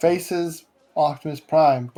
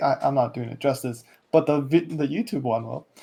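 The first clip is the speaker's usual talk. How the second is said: ordinary talk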